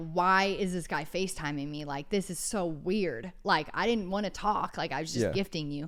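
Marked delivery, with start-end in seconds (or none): none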